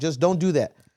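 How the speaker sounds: put-on scolding tone. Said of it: "And I'll say it in a tone".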